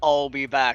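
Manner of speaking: put-on robot voice. Joking after a character bursts through a wall: Terminator voice. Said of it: "Terminator style".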